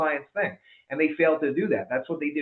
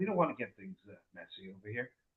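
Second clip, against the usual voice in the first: very quiet, soft, gentle, low, hushed voice; 6 semitones lower, 12 dB quieter than usual. Speaker acting out a typical mobster walking in, in a nice soft voice. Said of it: "with a nice soft voice saying".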